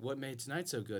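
normal talking voice

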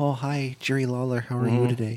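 quiet gentle voice. Imitating a wrestler greeting an announcer: soft indoor voice. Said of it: "she's very indoor voice".

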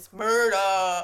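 very loud, emphatic, booming, belted-out shout. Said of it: "that was a good [name]".

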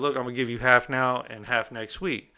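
ordinary delivery

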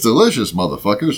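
commercial-announcer sales pitch, like a TV ad. Doing a food commercial line: Samuel L. Jackson voice. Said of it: "If Samuel L. Jackson did commercials".

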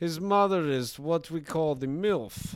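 put-on Russian accent, loud and high-pitched. Joking with co-hosts in a Russian bit, put-on Russian accent. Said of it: "you are good at Russian".

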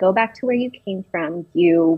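plain

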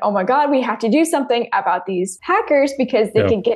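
ordinary talk

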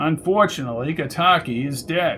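usual speaking voice

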